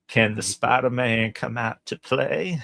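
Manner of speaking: mock Southern drawl villain voice. Acting out Matthew McConaughey as Norman Osborn taunting Spider-Man: Matthew McConaughey as Norman Osborn. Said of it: "him doing that Southern drawl".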